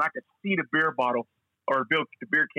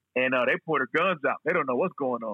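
ordinary talk, nothing marked

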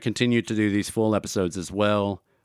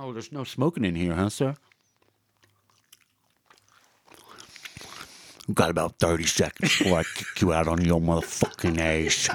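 put-on voice with gum in mouth, lower; 4 semitones lower than usual. Doing an impression of the garage guy with gum in the mouth: impression of the garage guy. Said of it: "I was gonna give you an impression of the garage guy".

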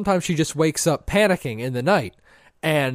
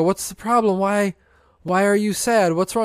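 groggy, bleary, half-awake sleepy mumble; 4 semitones higher than usual. Retelling how he answered his wife while half awake: imitating his own bleary half-awake voice. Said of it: "I kind of blearily wake up and go".

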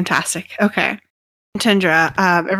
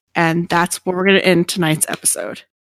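plain

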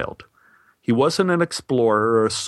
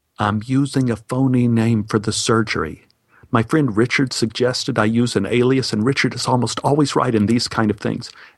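put-on whispering. Retelling explaining a fake name to the desk man: retelling a whisper. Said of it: "I whispered".

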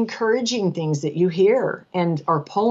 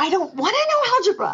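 put-on yelling, higher; 13 semitones higher than usual. Retelling yelling at a husband about relearning algebra: retelling own yell. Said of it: "I'm yelling at my husband saying".

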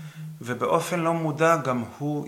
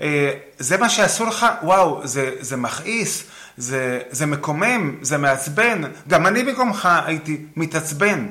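purposely louder, raised tone; 4 semitones higher, 7 dB louder than usual. Speaker demonstrates matching an upset person's loudness in a role-play: deliberately raised volume. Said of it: "אני באופן מודע מגביר את הווליום".

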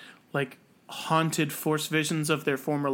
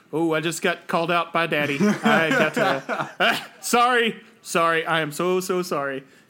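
put-on groveling villain voice, louder; 4 dB louder than usual. Retelling Vader's reply at the end of the Kenobi series: mock groveling Vader apology. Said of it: "he's like".

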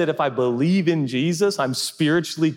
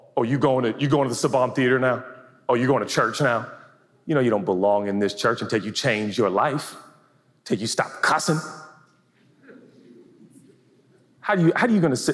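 scolding, accusing inner-critic voice; 4 semitones lower than usual. Acting out the voice heard in one's head, as an accusing inner voice. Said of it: "that's the voice you hear in your head".

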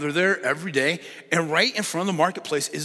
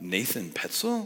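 name said with rising, question-like intonation; 7 semitones lower, 6 dB quieter than usual. Retelling how the judge called out the name: imitating a questioning rise. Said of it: "that question mark in her voice".

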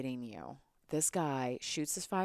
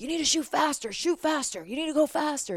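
very loud, high-pitched screaming; 12 semitones higher, 8 dB louder than usual. Recalling a man who screamed at the group, retelling his screaming. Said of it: "He's just screaming at us".

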